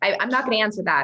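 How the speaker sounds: normal talking voice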